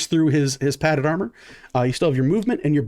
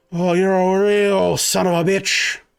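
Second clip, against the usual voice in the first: wounded voice, coughing, higher, louder; 5 semitones higher, 3 dB louder than usual. Narrating a game scene, voicing a man wounded in the abdomen, coughing blood. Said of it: "coughs up a bit of blood and goes".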